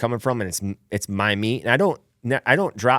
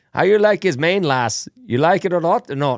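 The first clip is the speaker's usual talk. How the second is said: clumsy, bad, put-on Irish brogue, high-pitched; 6 semitones higher, 4 dB louder than usual. Retelling what an old man in Ireland said: bad Irish accent. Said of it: "my Irish sucks".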